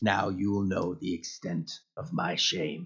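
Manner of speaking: deep, gravelly, slow, rough low voice. Quoting a disgraced uncle's line as you enter a dungeon, deep gravelly voice. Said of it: "he's got like this deep gravelly voice".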